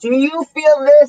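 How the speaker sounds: mock, loud, high-pitched screaming. During a house walkthrough, the speaker reenacts screaming to the far-off family. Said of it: "and I'm screaming".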